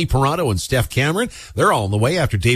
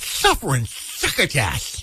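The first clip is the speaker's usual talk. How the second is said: poorly done breathy cartoon cat; 3 semitones higher, 4 dB quieter than usual. Repeating Bev's clean swear substitute on air, in a worst-ever Sylvester impression. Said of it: "my worst Sylvester impersonation".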